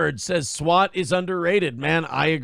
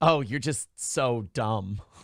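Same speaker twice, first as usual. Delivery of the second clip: slow, playful, flirty teasing, mock-mean; 4 semitones lower, 5 dB quieter than usual. Retelling how April flirts by insulting: imitating April's playful mean flirting. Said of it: "it's a playful mean".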